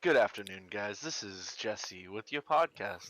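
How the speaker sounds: on-air podcast host style radio announcer delivery. Jokingly opening a podcast after being called the podcaster: radio voice. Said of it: "That radio voice".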